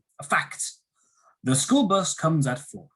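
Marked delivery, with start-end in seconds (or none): 1.5-2.8 statement tune with falling intonation, ending down on "four". Giving an example statement in an intonation lesson, with falling intonation. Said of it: "Falling intonation".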